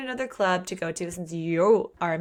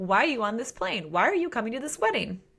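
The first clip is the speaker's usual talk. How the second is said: acted surprised disbelief, higher pitch; 4 semitones higher than usual. Acting out a character's line on seeing someone board the plane: acting out surprise. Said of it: "his surprise when he sees her".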